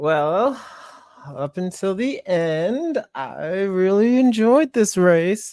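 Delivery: very high through gritted teeth, end drawn out. Podcast host giving a verdict on the race, said through gritted teeth. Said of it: "I say through gritted teeth".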